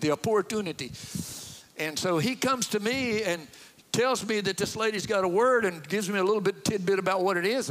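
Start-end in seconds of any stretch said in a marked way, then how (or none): 0.0-0.9 imitated South African pronunciation. Speaker mimics how a lady at church pronounced a word, imitating a South African accent. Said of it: "The way she said opportunity".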